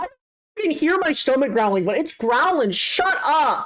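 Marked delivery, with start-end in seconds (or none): 2.7-3.7 fed-up, angry, exasperated scolding tone. Yelling at a growling stomach, getting mad: getting mad, yelling. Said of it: "I'm getting so mad at myself".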